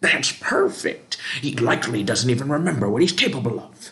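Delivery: put-on old prospector voice, mild holler. Narrating a game, the speaker voices the charging general, yelling in an old prospector voice. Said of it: "yells the general".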